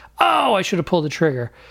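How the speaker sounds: plain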